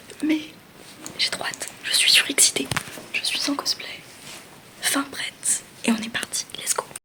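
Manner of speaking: speaking in a hushed whisper. Setting off from her grandparents' place to Lausanne, talking to listeners while whispering. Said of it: "je chuchote".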